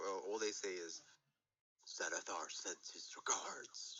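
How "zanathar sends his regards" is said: deep, slow, breathy whispered changed voice. Game master voicing figures whose voice changes as they give a message, deep changed voice. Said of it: "you could kind of hear this deep voice".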